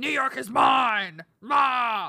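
very loud, slow, huge villain roar. Retelling a Batman and Ninja Turtles crossover plot, Bane voice. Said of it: "is that how he sounds?".

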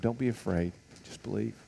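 whispering. Retelling words of comfort after news that she is dead: imitating a whisper. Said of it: "he whispers to him".

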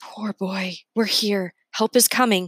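hushed, whispering voice. Reading a story where the grandmother comforts a boy in a hole: whispering. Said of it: "She whispers".

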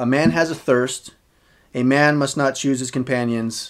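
ordinary talk, nothing marked

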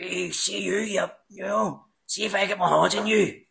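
put-on heavy, broad Belfast accent. Recounting how the speaker's accent changed in that moment, in a very strong Belfast accent. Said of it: "I went very strong Belfast".

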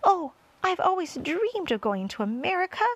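high, eager, excited cry. The centipede speaks to friends who have crossed the Atlantic overnight: crying out. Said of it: "cried the centipede".

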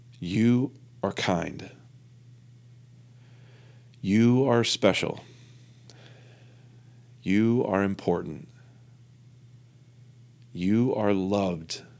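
tearful, crying near-whisper. Retelling repeating affirmations to oneself: retelling a tearful near-whisper. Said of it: "With tears rolling down my face and almost whispering".

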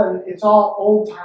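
ordinary talk

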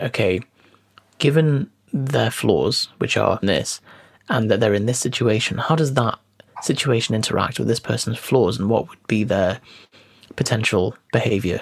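ordinary delivery

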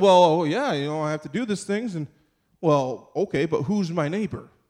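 put-on evasive, hesitant, wiggling delivery. Speaker retells the lawyer's reply in a Bible story: imitating an evasive lawyer. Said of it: "trying to kind of wiggle around a little bit".

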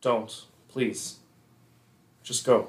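softly pleading. A game master voices a character speaking so only one player hears: quiet pleading. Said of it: "Quietly, so that only Romanos can hear".

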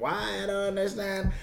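put-on soft Jamaican accent. Speaker recalling relatives from a jamaican household, in a jamaican accent. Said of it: "Do the accent again?".

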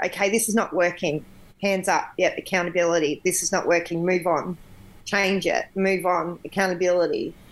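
ordinary talk, nothing marked

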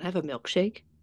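timid, shy, bashful, small voice. Retelling how a man asked for a drink: imitating a bashful request. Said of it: "he kinda looked bashful".

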